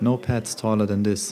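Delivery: ordinary delivery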